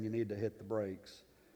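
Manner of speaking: soft, hushed voice. Retelling a near-crash in the car, in a quiet voice. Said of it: "in my lovely, quiet voice saying".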